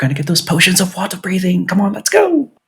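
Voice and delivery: little, quick, hushed, breath-only half-whisper. Voicing his character as he helps a woman who lost her balance: half-whispering a little. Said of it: "he he whispers a little bit like".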